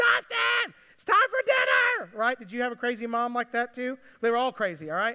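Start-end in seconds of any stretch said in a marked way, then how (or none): 0.0-2.2 put-on very high, loud, drawn-out yell. Retelling how a mother called her child home: imitating mom yelling loudly. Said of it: "my mom yelled at the top of her lungs".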